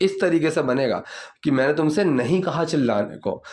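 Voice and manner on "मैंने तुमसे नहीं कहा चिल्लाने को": usual speaking voice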